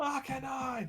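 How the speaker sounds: very high, barking yelled call. Player character holds up a pin and yells for the wolf again, barking shout. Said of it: "He's barking again".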